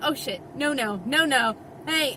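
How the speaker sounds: ordinary talk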